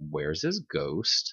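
puzzled, uneasy, confused and worried. Retelling a game line: imitating a confused, worried voice. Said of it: "kind of like a confused, kind of worried sound".

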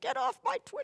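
put-on cranky, grumpy old man, very high pitched. Retelling blocking people on Twitter: mock angry old man. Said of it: "doing the angry old man shaking his fist".

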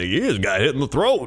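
game commentary delivery like a TV sports broadcaster. Retelling what a commentator said about a hit: Peyton Manning impression. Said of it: "a great impression, both of you, for, of Peyton Manning".

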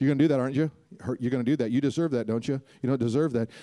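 insistent, pestering, needling nagging voice. Showing how a nagging inner voice sounds: imitating Satan nagging. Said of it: "Satan always nags".

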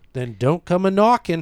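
put-on Boston accent. Joking around with the other speakers, delivering the line in a Boston accent. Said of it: "It's a great Boston accent".

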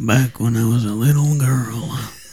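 deep, spooky storytelling voice. Trying out voices, speaker does a deep scary story voice. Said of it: "this is my scary story voice".

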